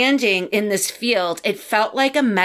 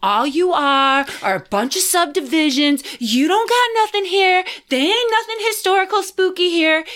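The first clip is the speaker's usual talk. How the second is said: rising, pitched-up, taunting trash-talk yell; 8 semitones higher than usual. Retelling driving around Delaware talking smack to the state, reenacting the yelling. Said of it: "And I'm yelling at the state".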